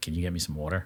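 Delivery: flat monotone delivery. Describing a podcaster asking a guy for water, in a monotone imitation of her. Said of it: "very monotone".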